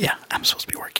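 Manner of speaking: hushed, fast whisper.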